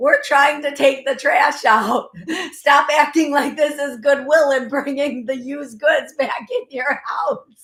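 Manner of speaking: loud speech, laughing through the words. Channeling a message from the other side for listeners, laughing while talking. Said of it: "I'm laughing as I channel this".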